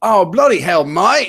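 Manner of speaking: put-on British accent. Repeating the line to ask another speaker's opinion: put-on British accent. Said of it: "the stuff that I like to do in British".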